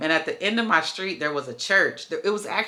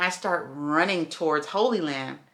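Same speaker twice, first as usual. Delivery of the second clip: ordinary talk, nothing marked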